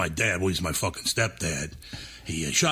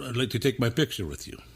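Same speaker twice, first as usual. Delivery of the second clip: put-on really good Indian accent; 4 semitones higher than usual. Retelling what women said to her, in an Indian accent. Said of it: "That's a really good Indian accent".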